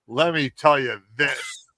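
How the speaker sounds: normal talking voice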